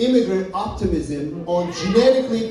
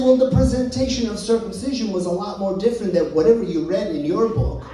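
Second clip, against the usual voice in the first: usual speaking voice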